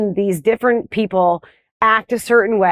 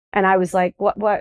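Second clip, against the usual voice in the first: ordinary talk, nothing marked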